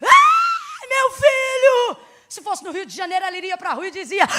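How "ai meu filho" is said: desperate wailing scream, high and loud. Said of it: "poderia sair gritando, desesperada".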